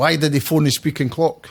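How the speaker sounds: ordinary talk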